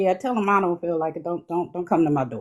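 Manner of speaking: plain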